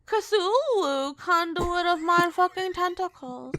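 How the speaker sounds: put-on babyish baby-talk voice. The speaker announces a grand title: baby voice. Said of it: "you don't like the baby voice?".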